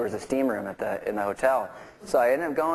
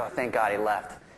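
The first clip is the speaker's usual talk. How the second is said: ordinary delivery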